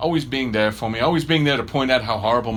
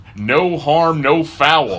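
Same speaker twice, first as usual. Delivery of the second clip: put-on American accent, delivered very slowly; 4 semitones higher, 7 dB louder than usual. Quoting a saying the way Americans would, in a put-on American accent. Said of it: "As the Americans would say".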